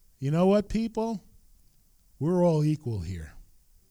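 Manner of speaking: acted-out, loud, booming voice with swooping pitch. Retelling what a tall man said while looking over the people, in a loud, booming voice. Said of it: "in this loud, booming voice".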